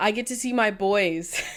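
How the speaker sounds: imitated crying speech. Quoting back what the listener said earlier, imitating someone crying. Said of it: "I asked you again why you were crying".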